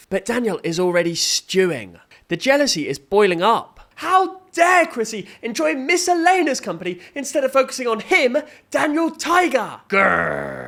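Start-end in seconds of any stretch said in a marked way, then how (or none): 9.9-10.7 rough, creaky, drawn-out growl. Recapping a jealous scene: Daniel Tiger impression. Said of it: "That was my Daniel Tiger impression".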